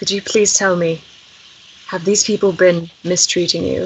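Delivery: very quiet, hushed, soft and concise. Approaching the unicorns, the player's character asks if they were mistreated, very quiet and succinct. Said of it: "I just say very succinctly and quietly".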